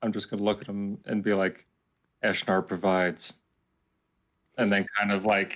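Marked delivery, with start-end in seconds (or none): 2.2-3.3 sarcastic delivery. Playing a character at the fire, quoting a priest's saying: sarcastic. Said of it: "I'm going to sarcastically say something".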